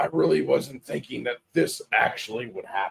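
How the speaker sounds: rough, ragged, unkempt, disheveled speaking voice. Players clear through the rubble and hear someone speak: rough, disheveled voice. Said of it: "you hear a disheveled, rough voice say".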